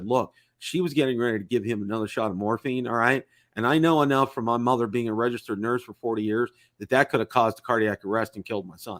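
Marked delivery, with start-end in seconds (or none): none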